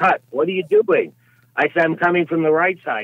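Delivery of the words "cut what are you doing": loud, pitched-up yell. Recounting how the director kept stopping the take, retelling the director's yell. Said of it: "The director yelled".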